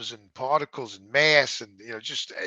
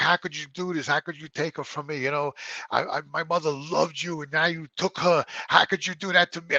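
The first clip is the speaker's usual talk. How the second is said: put-on accusing, outraged, angry yelled outburst; 4 semitones higher than usual. Recalling a night at their mother's grave, the speaker replays what they said to God: retelling own yelling. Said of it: "And I was yelling at him in the cemetery".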